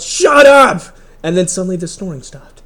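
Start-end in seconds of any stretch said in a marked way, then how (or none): 0.0-0.8 high, loud yell. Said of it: "so I just yelled".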